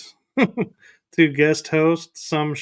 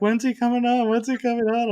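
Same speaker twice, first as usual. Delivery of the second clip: mock eager, impatient fangirl voice, higher; 8 semitones higher than usual. Teasing another speaker by imitating them as an excited fangirl. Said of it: "you are sounding like a fangirl".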